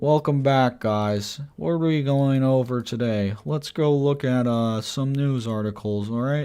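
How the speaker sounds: slow, drawn-out delivery with pauses. Imitating George, who talks slowly, after joking about being in George mode. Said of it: "he just talks a little bit slow and he takes a little bit of time to process".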